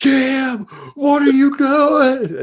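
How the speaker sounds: very high, stretched-out, drawn-out scream. Retelling what is heard during broadcasts: imitating Coach Cal yelling. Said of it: "Cal being like".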